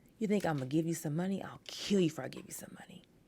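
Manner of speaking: angry snapping. Retelling how he reacted to a request for money: imitating him snapping angrily. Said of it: "he just snapped".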